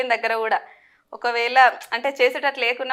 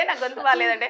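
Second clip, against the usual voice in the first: usual speaking voice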